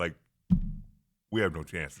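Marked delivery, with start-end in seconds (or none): 1.3-2.0 put-on beaten-down announcer voice, sounding defeated. Imitating a play-by-play guy calling a game: imitating Tim Healy sounding defeated. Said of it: "you could just tell in his voice".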